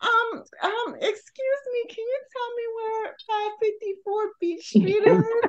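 put-on helpless damsel voice, high, slow and innocent. Retelling asking a group for directions while lost: put-on innocent damsel in distress voice. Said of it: "I put on my most innocent damsel in distress voice".

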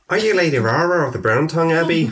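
loosely placed, put-on Irish accent. Voicing a character greeting a lady in a put-on irish accent. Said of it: "what's this accent?".

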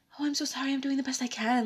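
meek, scared-sounding voice. Imagining apologizing to an aggressive boss: mock timid and shy apology. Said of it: "all timid and shy and just been like".

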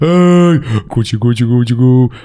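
put-on cooing in a babytalk voice. Comparing two ways of saying 'koetje koe': cooing baby voice. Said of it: "ik heb inderdaad wel een babystem".

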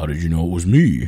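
loud, tough hero voice. Retelling a Green Lantern movie scene, voicing the hero when she recognizes him: mock-tough Hal Jordan voice. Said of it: "I love your Hal Jordan voice".

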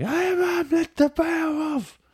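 very high-pitched, slow, drawn-out scream. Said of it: "he's just screaming like".

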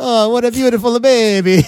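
put-on very high, drawn-out old Italian man voice. Retelling what an old barber said while shaving: imitating an old Italian barber. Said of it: "the old Italian barber would shave him and say".

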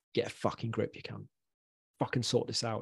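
mock rant in harsh, aggressive whisper. Retelling past words said to oneself in the mirror: imitating own aggressive self-talk. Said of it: "I'd talk to myself like that, like I was in a, in a, a scrap in a pub car park".

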